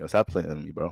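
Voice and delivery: soft voice, quavering and shaking a bit. Roasting an imaginary person, acting out their reply: mock trembling voice. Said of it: "Voice start shaking up a little bit".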